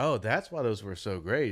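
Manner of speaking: ordinary talk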